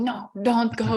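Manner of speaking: put-on German accent. Retelling her grandpa's words on the phone before a flight, in a thick german accent. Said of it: "In his like thick German accent".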